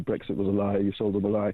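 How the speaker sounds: ordinary talk, nothing marked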